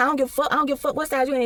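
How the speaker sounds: mock hostile, aggressive, foul-mouthed cussing rant. Retelling a coworker going off at the register: imitating a coworker cussing loudly. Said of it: "Just going in. Just cussing".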